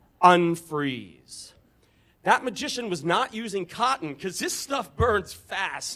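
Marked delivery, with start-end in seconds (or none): none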